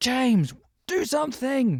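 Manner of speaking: play-acted, very high screaming. Retelling a film scene where she screams at him: imitating someone screaming. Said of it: "she's just screaming at him".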